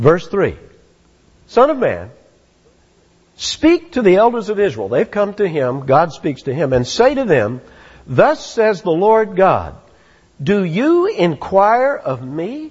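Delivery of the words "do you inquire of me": pointed, rebuking, reproachful tone. Reading a bible verse aloud, speaker gives god's question rhetorical-question intonation. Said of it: "we have to read it with some intonation like that".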